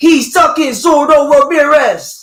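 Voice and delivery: put-on slow, high LA street accent.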